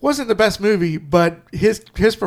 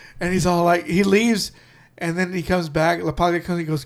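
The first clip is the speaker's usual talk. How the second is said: normal talking voice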